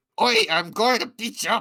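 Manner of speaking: very high, loud, shrill, terrible fake Irish accent. Told to add an irish accent, the speaker does a bad irish accent. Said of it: "you gotta add an Irish accent to it".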